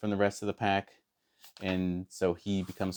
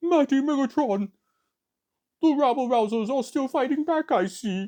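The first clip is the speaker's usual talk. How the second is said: silly cartoon robot voice, very high, loud and booming; 6 dB louder than usual. Imitating how a character talks in the cartoon, funny cartoon voice. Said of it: "a kind of a funny voice in the cartoon. He talks".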